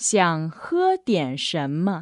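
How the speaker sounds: slow, careful, clear pronunciation. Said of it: "you can say".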